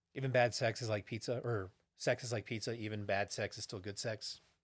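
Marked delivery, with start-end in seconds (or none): none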